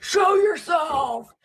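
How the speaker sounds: play-acted very high, pushy, insistent shout. Mocking TV ghost hunters who yell at ghosts: imitating ghost hunters yelling. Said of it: "yell at ghosts".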